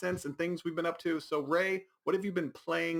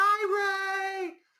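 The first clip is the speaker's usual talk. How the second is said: very shrill, obnoxiously loud, very high, "hi" stretched; 4 dB louder than usual. Imitating a woman arriving after a party invite, imitating loud, high-pitched voice. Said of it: "obnoxiously loud, high pitched voice".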